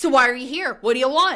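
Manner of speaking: aggressive, confrontational tone. Retelling a sudden confrontation after normal talk: imitating Taylor getting aggressive. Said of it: "Taylor gets, like, real aggressive".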